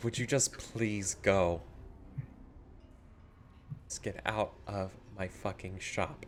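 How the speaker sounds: hushed, weary, very quiet, slow, exasperated voice. Voicing a shopkeeper with a migraine telling adventurers to leave: exasperated migraine voice. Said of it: "doing that sort of, like, "I have a migraine."".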